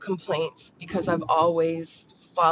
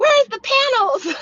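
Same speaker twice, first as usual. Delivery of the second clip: loud, very high-pitched demanding shout; 8 dB louder than usual. Streamer recounting messages from viewers, imitating a viewer yelling. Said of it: "kind of yelling at me like".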